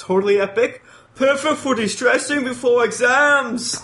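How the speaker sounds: bad put-on Australian accent. Reading a listener's comment from Australia aloud, in a bad Australian accent. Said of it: "your accents".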